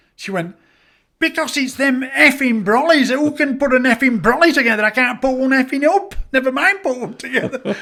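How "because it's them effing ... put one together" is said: mock, high-pitched, carrying-on ranting tirade. Retelling how a prisoner explained herself to the governor: imitating June carrying on. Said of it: "and she was carrying".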